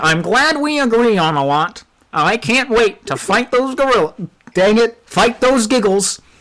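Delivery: cranky, rough-edged, irritable gorilla voice. Playing a gorilla character in a fantasy game, speaking to another character about a shared quest, in a gruff, irritable voice. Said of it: "[name] [name] looks pissed. / [name] puts another cigar in his mouth and he looks at you, [name], and, and you. Eh, if it pays well. I can offer money. For You already those got me sold then. three of".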